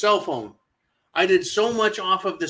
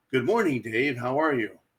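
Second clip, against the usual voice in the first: sci-fi spaceship computer voice; 5 semitones lower than usual. Quoting the movie computer to viewers: HAL 9000 voice. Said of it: "the Hal nine thousand".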